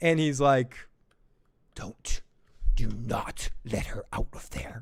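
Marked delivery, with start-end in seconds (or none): 1.7-4.8 hushed, slow, menacing whisper. Retelling a scene where Jace orders the door kept locked: imitating Joe Goldberg intimidation. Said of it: "he gets all Joe Goldberg intimidating".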